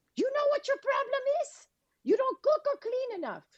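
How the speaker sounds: put-on Cuban accent, pitched very high. Retelling what their mother replied about their problems, in her cuban voice. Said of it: "she promptly said in her Cuban voice".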